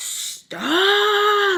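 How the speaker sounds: put-on, very high, stretched, furious top-of-lungs shriek. Retelling how a friend's mom screamed for them to stop: imitating a furious scream. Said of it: "at the top of her lungs, she is pissed".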